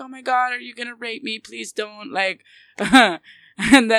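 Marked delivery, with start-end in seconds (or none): 0.0-2.1 mock-frightened pleading, much quieter. Retelling a story, voicing the woman they pull out, acting scared. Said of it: "she's all scared".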